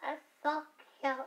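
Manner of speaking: very high, grating, really annoying put-on voice. Showing a phrase they keep saying, in a really annoying voice. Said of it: "me saying it's so cute in a really annoying voice".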